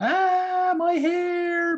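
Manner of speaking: mock shrill, very high, shrieking scream. Retelling how she screamed in the log ride's misting tunnel, imitating someone screaming. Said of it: "she starts screaming".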